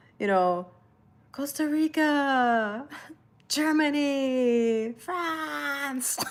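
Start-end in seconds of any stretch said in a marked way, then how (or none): 1.3-6.2 put-on very slow, drawn-out, high country scream-out. Recalling the Miss Universe pageant calling out countries: imitating Miss Universe scream. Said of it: "when she, like, screamed it out".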